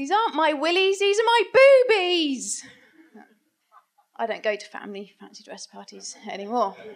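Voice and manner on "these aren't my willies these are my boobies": piercing, shrill, loud screeched outburst. Telling of a fancy dress party when the music stopped, re-enacting their screech. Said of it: "that's when I screeched".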